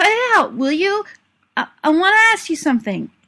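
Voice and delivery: hearty quavering voice. Narrator reading Tom suddenly bursting out to Billy, in a hearty, quavering voice. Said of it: "in a hearty, quavering voice".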